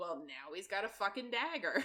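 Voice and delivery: ordinary talk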